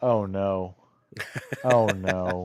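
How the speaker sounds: acted, very slow, drawn-out, unhappy dismay. Retelling own reaction to bad news in front of in-laws: imitating own unhappy dismay. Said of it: "very, very not happy".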